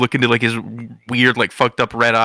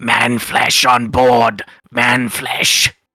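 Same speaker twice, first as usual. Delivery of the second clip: very slow, drawn-out creature screech; 3 dB louder than usual. Voicing a skittering creature in front of Rock: creature screaming. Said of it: "he starts screaming".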